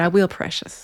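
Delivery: imitated Southern accent. Retelling a conversation with their mom, imitating mom's southern voice. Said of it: "my mom in her beautiful southern voice says".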